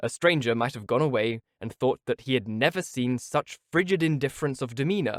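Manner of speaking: ordinary delivery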